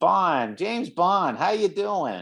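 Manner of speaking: high voice in an American accent. Discussing Bond films, the speaker tries the famous line: James Bond in American accent. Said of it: "with my American accent".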